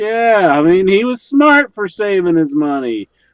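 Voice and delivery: high, loud, heated rant. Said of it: "I'm getting loud".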